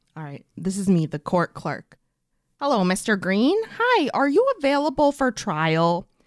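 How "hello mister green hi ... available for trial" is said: put-on Midwestern accent, high-pitched and slow. Playing the court clerk opening a Zoom call, in a Midwestern accent. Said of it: "I don't know why I'm doing a Midwestern accent".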